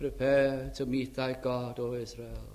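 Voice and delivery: near-monotone drone, soft and slow. Retelling a preacher's words to a crowd, in John Wesley's almost monotonous voice. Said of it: "in his almost monotonous voice".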